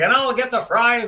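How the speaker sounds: excited sportscaster voice. Retelling a broadcaster ordering at a restaurant: imitating John's exciting game call.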